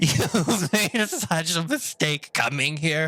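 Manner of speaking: slow, mocking, taunting tone, laughing through the words. Voicing a creature that laughs in the player's face: laughing mockingly. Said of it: "laughing in your face and says".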